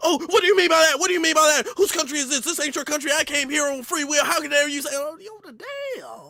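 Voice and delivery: acted, worked-up, indignant, high, heated angry outburst. Speaker acts out how someone reacts, imitating an angry outburst. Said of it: "You see how mad they get?".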